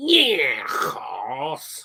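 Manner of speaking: mock Liverpool accent, put-on Scouse. Joking about how people speak in liverpool: mock liverpool accent. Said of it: "I sound like a bloody farmer".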